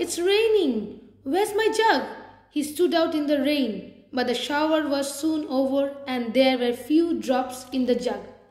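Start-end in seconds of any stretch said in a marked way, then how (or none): 0.0-2.0 high, joyful crying out. Narrator reads a man woken by rain in the night, crying out in joy. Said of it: "cried Tupini in joy".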